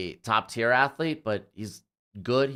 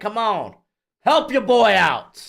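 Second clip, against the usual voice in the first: shouting, higher and louder; 11 semitones higher, 8 dB louder than usual. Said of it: "I probably shouldn't yell".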